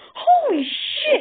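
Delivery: shrill, very high, very loud startled yelp. Dash runs downstairs and notices the struggling intruder under Sol's paw, yelping. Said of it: "she yelped".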